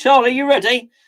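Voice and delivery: high, shouted call, loud. Calling out to someone who isn't actually there, shouting. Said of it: "I don't know why I'm shouting at him".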